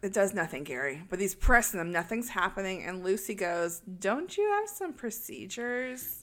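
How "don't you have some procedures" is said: soft, condescending, talking-down tone. Retelling a story about an elevator that won't work, quoting a woman, condescending. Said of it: "She's real condescending".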